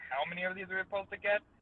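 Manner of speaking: acted snarky, needling voice. Retelling own question to Albatross: imitating own sarcastic question. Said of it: "I was asking sarcastically".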